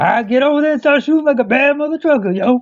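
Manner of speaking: very high, off-target, failed rough smoker's voice. Quoting a man whose unique voice you can't do right, in a bad imitation of a man's voice. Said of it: "I can't do his right his voice right".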